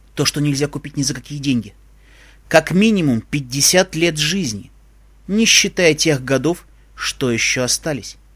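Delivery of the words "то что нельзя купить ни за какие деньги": ordinary delivery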